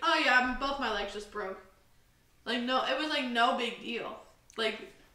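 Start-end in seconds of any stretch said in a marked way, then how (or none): none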